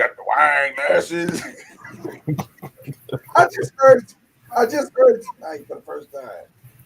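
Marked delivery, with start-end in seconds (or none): 0.0-1.4 put-on Arkansas yokel, country bumpkin accent. Host of a live wine stream mocking how they sound: country bumpkin voice. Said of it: "I sound like a country bumpkin".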